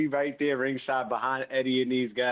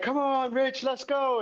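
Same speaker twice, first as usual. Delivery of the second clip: mock scream, very high and drawn out; 11 semitones higher than usual. Retelling how a friend shouted at ringside: imitating Eddie screaming. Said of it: "Eddie's over there screaming like".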